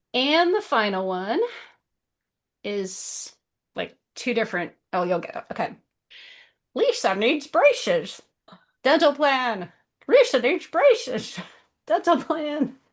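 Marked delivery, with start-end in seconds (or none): 6.8-12.7 put-on, high TV cartoon character voice. Host gives the final clue in a guessing game, doing The Simpsons voice. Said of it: "I'm trying to do the voice".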